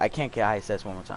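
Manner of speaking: ordinary talk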